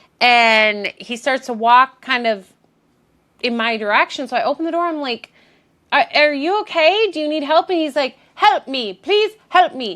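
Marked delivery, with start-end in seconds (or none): 8.4-10.0 put-on, higher-pitched Eastern European accent. Retelling what a hooded man coming toward the door said, put-on eastern european accent. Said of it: "Eastern European accent".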